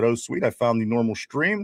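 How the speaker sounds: ordinary talk, nothing marked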